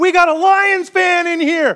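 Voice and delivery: high, loud, shouted callout.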